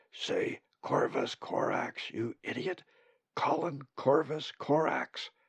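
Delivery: slow, urgent whisper. Zack, suddenly at Colin's side, speaks into his ear; whispering. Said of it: "whispering in his ear".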